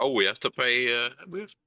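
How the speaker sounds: speaking through little giggles. Acting out a company joking about paying a fine: mock giggling while talking. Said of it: "they're just giggling".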